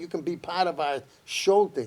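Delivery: normal talking voice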